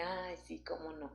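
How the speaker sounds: low, hushed, mocking murmur. Imitating the doubting voice that comes while praying: imitating the devil's mocking little voice. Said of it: "esa vocecita de".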